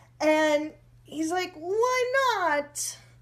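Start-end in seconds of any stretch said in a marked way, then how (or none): 1.6-3.0 put-on Italian accent, very high. Retelling a man asking why she won't kiss him: Italian-sounding accent. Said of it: "this accent sounds like um, he's Italian".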